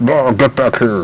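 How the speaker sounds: bubbling voice sounding through water. Yelling in character after a missed harpoon throw: burbly yell. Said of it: "yell out a burbly".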